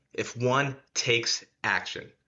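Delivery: slow, emphatic, deliberate delivery.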